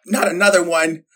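normal talking voice

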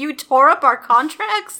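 loud, panicked outburst of disbelief. Retelling own reaction to torn-up contracts: imitating own panicked reaction. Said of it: "I'm panicking".

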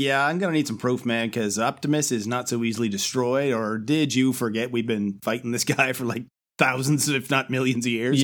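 ordinary talk

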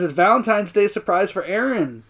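ordinary talk

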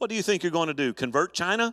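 disparaging, needling, sarcastic prodding tone. Retelling a ship captain's question to a missionary: imitating a sarcastic prodding question. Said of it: "kind of a sarcastic, prodding question".

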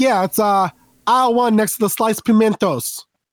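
put-on, questionable Italian accent, high and slow. Retelling how they sent grocery shoppers to aisle one, put-on italian accent. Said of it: "we'd say it with an Italian accent".

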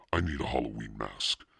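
usual speaking voice

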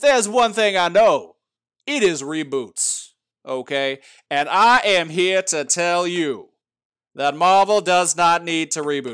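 slow, loud Southern drawl, lawyer voice. Speaker making a point about comics to viewers: Southern lawyer voice. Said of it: "I'm going into a Southern lawyer voice".

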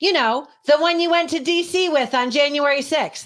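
loudest possible voice, very high and blaring. Retelling an encounter, the speaker quotes what a man said in a very loud voice. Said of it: "in the loudest voice you can imagine".

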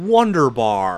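bad, unconvincing put-on American accent with twang. Repeating a name in conversation, terrible American accent. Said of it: "As I say in my terrible American accent".

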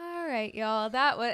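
drawn-out on-air delivery. Retelling how they talk on their radio show: imitating own slowed-down radio delivery. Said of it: "slow it down".

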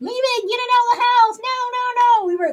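play-acted very high-pitched, loud, frantic screaming. Recalling a squirrel in a jar, the speaker retells the siblings' reaction, retelling a scream. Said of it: "We literally were hollering, screaming".

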